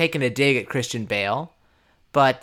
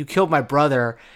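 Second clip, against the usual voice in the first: put-on crying voice; 3 semitones higher than usual. Retelling a film scene where a brother is killed: imitating someone crying. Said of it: "crying, being like".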